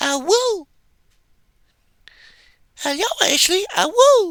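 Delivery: very high, little bitty puppy voice. Retelling how a voice actress came in, the speaker redoes her little bitty puppy voice. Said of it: "did this little bitty puppy voice".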